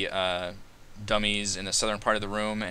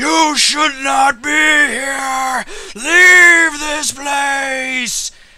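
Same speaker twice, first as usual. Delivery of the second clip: very high, very loud, slow ghostly wail; 16 dB louder than usual. Narrator voicing the ghost at the head of the table rushing at you: ghost screaming. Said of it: "and he screams".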